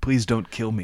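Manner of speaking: imitated old man's pleading tone. Retelling voices heard from a stall: imitating an old man pleading. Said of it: "the voice of an old man saying".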